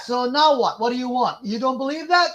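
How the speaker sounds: high, angry, frustrated, heated screaming. Arguing with someone who keeps doubting their explanation, screaming. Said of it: "Why are you screaming right now?".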